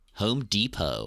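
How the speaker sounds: silly, stupid put-on American accent. Naming the American equivalent, in a stupid American accent. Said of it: "I'm gonna have to do a stupid accent because I'm not saying this in an English accent".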